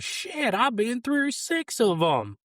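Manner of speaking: acted very high, swooping, drawn-out shriek. Retelling how a lady in the back of the room screamed: imitating a lady screaming. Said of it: "and she screamed".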